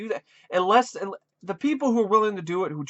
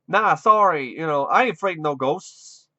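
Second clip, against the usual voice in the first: put-on accent of Boston; 2 semitones lower, 4 dB louder than usual. Mocking a cringe-inducing clip, quoting Dan Aykroyd in his Boston accent. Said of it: "his Boston accent".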